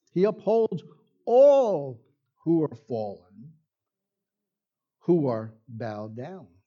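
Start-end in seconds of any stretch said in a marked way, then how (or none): 1.3-2.0 weight falls on all. Reading the passage aloud after explaining its stress, with stress on 'all'. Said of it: "the natural stress should be on the word all".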